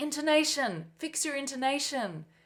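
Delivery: high yelled voice. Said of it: "she would yell out".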